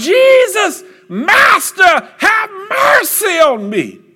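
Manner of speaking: very high, loud, swooping, drawn-out yell. Retelling the blind man calling out to jesus: imitating a yell for mercy. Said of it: "And he yelled out".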